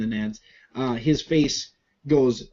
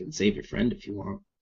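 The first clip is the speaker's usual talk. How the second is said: faint, hushed, very soft whisper, close to mic; 5 semitones lower, 7 dB quieter than usual. Narrating a game, voicing a figure just behind the listener's shoulder, in a real soft whisper. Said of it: "a real real soft whisper that you hear just over your left shoulder".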